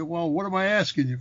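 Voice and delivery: plain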